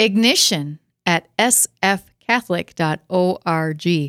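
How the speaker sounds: drawn out, slow, deliberate, word by word. Asked to repeat the email address once more, said slowly. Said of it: "Was that slow enough?".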